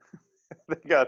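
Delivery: high, laughing tone of disbelief, spoken through a laugh.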